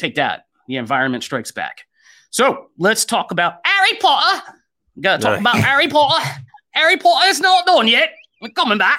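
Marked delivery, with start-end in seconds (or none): 2.3-9.0 terrible put-on Cockney, nasal, high and swooping. Moving on to talk about the next topic, in a bad fake Cockney accent. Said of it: "We're doing a fake Cockney accent really terribly".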